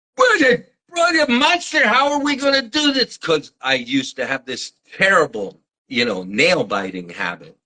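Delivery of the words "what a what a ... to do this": very high, put-on, screeching screaming outburst. Retelling a reaction at a cologne test shoot: imitating someone screaming. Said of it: "he starts screaming".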